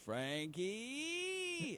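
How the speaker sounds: very high, swooping delivery, name drawn out. Retelling a voicemail from Jim Nantz: Jim Nantz impression. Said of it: "he left me the message".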